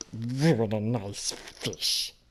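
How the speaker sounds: odd fantasy creature voice. Asked to try an impression, doing a Gollum voice. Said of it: "in the Gollum voice".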